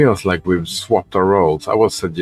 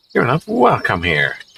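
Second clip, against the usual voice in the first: angry voice, pitched up; 5 semitones higher than usual. Reading a story aloud, a character answers a knock at the door: angry voice. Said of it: "an angry voice sounded from behind the door".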